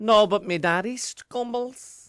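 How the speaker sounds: poor imitated Dublin accent. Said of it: "Very bad Dublin accent".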